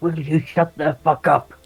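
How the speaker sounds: high, hissed voice. Retelling a character hissing at everyone while heading for the door: retelling a hiss. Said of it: "he like hisses at everyone".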